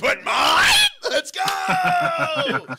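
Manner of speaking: booming, very loud, stretched-out shrieking shout. Retelling his reaction when the convention organizer praised his impression; retelling a shriek.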